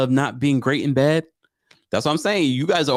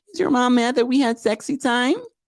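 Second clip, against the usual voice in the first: put-on woman's voice, very high pitch; 9 semitones higher than usual. Repeating a woman's question in her voice: Memphis voice impression. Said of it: "I could do her voice".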